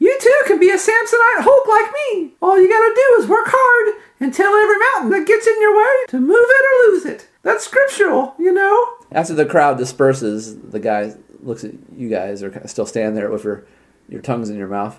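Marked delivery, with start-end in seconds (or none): 0.0-8.9 very high, loud squeaky voice. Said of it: "Buddy announces".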